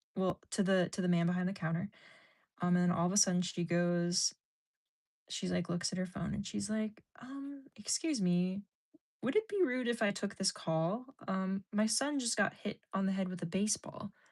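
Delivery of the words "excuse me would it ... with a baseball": acted courteous, careful, extra-polite tone. Retelling a stranger at the post office asking to take a call: imitating a polite request. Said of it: "the most polite interaction".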